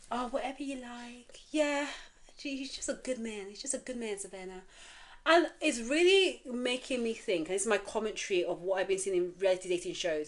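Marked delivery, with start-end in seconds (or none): 0.1-4.6 compliant, agreeable voice. Imitating how Virginia talked all season: imitating Virginia's agreeable voice. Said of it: "where the whole season she was like".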